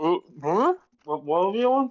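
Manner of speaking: talking around half a mouthful of food. Voicing a character answering with her mouth half full of food. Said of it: "with, like, half her mouthful just goes".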